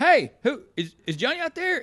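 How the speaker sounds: high-pitched, nervous, uneasy, stammering shout. Retelling how she called out to a group in the woods: imitating someone yelling. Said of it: "she's yelling".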